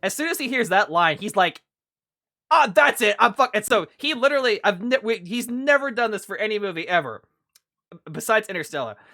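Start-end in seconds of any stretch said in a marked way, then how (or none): 2.5-3.6 fed-up, rough, furious outburst, cut short. Retelling a friend walking out of a movie: imitating a friend's angry outburst. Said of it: "he got so angry".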